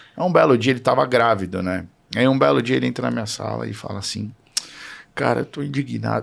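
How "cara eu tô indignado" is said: mock crying, quieter. Retelling what a man said on walking into the speaker's room, imitating someone crying. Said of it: "chorando, de verdade".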